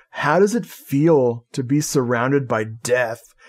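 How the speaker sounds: plain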